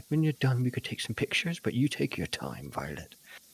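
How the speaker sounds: patient, careful, high, hushed half-whisper. Waiting in character for Violet to finish, speaking to her: half-whispering. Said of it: "maybe whisper, like".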